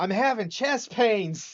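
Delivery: very high, very loud, shrill, sudden blurted yell. Retelling a woman on a stretcher yelling to an interviewer, retelling a sudden yell. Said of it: "she just turned and yelled".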